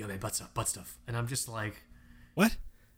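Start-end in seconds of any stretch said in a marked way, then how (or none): 0.0-1.0 hushed whisper, quieter and lower. Retelling what a man whispered in the speaker's ear, whispering. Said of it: "he whispers in my ear".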